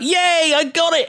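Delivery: yelled out, high and happy.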